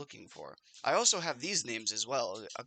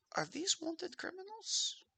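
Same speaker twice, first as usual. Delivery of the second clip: very high, hushed, secretive whisper; 6 dB quieter than usual. A game character gets close to a player and asks, whispering.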